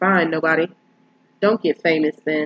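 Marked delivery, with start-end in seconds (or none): none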